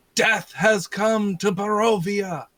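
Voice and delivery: very loud, booming delivery. A tabletop player's character announces himself at the door of a screaming lady: loud, booming voice. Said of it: "I just say in a loud, booming voice".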